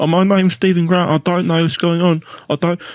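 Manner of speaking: put-on high, timid, meek British accent, pitched way up. Describing Oscar Isaac's role, imitating Stephen Grant with a timid British accent. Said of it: "got this like really timid British accent".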